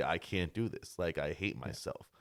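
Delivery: ordinary talk, nothing marked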